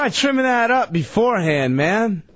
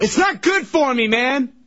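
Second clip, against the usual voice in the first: worked-up, heated, raised voice; 3 semitones higher than usual. Complaining to the group, yelling. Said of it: "Why are you yelling?".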